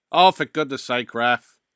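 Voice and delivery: very loud bellowing yell. Reacting to a penalty call during the match, shouting at the ref. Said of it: "I feel like I'm shouting".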